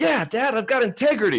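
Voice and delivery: put-on very high, proud little kid boasting voice. Retelling a son's reply after a race: imitating a proud five-year-old. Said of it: "so proud that he has integrity".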